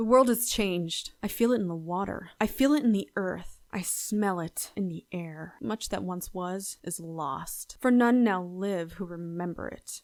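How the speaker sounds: contained, gut-deep, held-down anger. Showing a second read as Wrath: contained wrath, not yelling. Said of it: "not to, like, yell or scream with Wrath".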